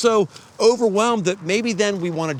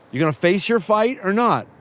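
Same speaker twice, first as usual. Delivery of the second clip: normal talking voice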